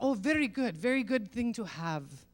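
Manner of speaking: put-on Middle Eastern accent. Retelling what a man said about a satellite service; Middle Eastern accent. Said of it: "I'm doing a Middle Eastern accent".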